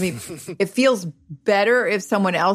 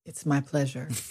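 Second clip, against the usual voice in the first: very soft, hushed public-radio announcer style; 5 semitones lower, 9 dB quieter than usual. A comedian guest, just introduced on the show, answers the host in an NPR delivery. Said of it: "That was an NPR delivery".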